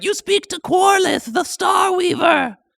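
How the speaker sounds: very high, loud giant mother-spider creature voice. Voicing a mother spider answering the party's greeting: mama spider voice. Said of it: "the voice is like".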